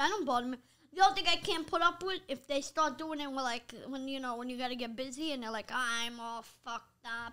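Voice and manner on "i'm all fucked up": very slow, soft, flat monotone robot drone. Quoting how some people talk, the speaker uses a little robot voice. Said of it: "that sounds like a little robot".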